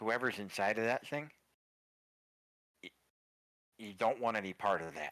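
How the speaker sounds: hushed whisper. A man beckons the listener close and warns them about the ring, whispering. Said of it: "He- He's whispering this to you".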